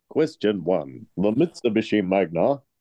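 put-on tv ad voiceover announcer voice. Quiz host reading out the first question, ad voiceover guy voice. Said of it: "You sound like the voice of the guy from the ad".

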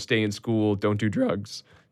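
soft, slow voice breaking mid-phrase. Speaker recalling what he wrote when signing autographs, voice cracking. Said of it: "there's another voice crack".

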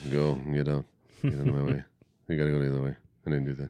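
low, mumbled yelling, movie-star impression. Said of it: "when he's yelling, he sounds like this".

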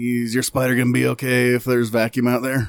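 rough, gravelly character voice. A player in a roleplaying game voices a character, in a gravelly character voice. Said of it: "I'm trying to keep to a gravelly voice for him".

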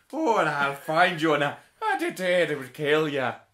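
put-on very loud, overdone, thick Irish accent. Mocking another speaker's Liam Neeson line: exaggerated Irish Liam Neeson impression. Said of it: "He's not that Irish in it".

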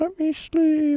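very high-pitched, drowsy, sleepy owl voice. Doing a joke impression during an ad read: tired owl impression. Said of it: "my impression of a tired owl".

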